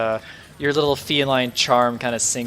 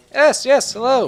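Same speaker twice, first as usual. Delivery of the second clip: put-on high, loud, eager, bright young elf voice. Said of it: "the young elven fellow ... he goes like".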